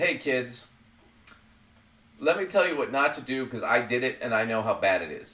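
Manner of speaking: usual speaking voice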